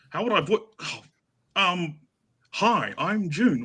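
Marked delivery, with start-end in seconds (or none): 2.4-3.6 put-on, fake feminine voice. Asked to voice June, the speaker tries a feminine voice: June voice, feminine. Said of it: "Can you make also a feminine voice?".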